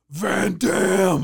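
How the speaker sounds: mock raspy, rough, high-pitched scream. Recalling looking down at him from the high-rise bleachers, act out screaming at him. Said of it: "I screamed at him".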